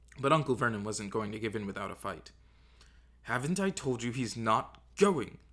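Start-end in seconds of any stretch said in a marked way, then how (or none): 3.2-5.3 slow, angry, combative hiss. Narrator reads an uncle refusing to let the boy go, hissed. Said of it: "he hissed".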